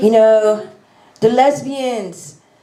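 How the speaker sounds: put-on Haitian accent, rising preacher-style delivery. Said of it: "So I'm gonna do the accent again".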